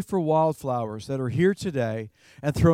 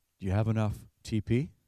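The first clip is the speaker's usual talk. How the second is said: secretive, hushed half-whisper; 6 semitones lower, 6 dB quieter than usual. Retelling a store associate's question in the store, imitating a half-whisper. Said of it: "said to us in a whisper".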